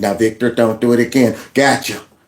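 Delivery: put-on gentle telling-off tone. Retelling how someone should have punished a caught offender: mock mild scolding. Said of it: "smacked his hand and said".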